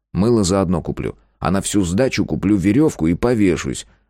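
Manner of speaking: ordinary delivery, nothing marked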